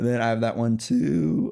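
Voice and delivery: casual tone, voice cracking mid-line. Talking on stream about figures on pre-order, the voice cracks. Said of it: "That was a really bad voice crack".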